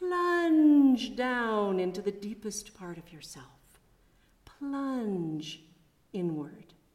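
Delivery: imitated British accent. Quoting a meditation instructor guiding the class: british accent. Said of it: "in his beautiful British accent".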